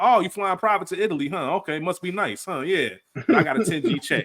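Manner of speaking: high, put-on, sarcastic, falsely impressed tone. Acting out a reaction to getting a ten thousand dollar check: put-on sarcastic tone. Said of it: "I love sarcasm".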